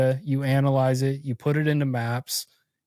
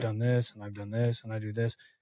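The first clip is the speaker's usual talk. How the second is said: put-on flat monotone, lower and quieter; 4 semitones lower, 8 dB quieter than usual. Speaker acting out how a monotone applicant sounds, imitating a monotone speaker. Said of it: "if you're monotone and you're like".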